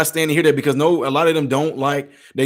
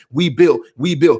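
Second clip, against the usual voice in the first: usual speaking voice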